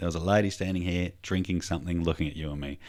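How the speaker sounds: ordinary talk, nothing marked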